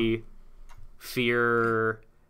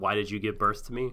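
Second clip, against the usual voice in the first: ordinary delivery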